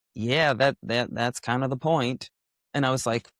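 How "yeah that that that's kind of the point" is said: easy, put-on Texas drawl. Quoting a travel partner's reply to his question, imitating a Texas drawl. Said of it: "in his in his Texas drawl".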